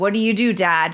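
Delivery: ordinary talk, nothing marked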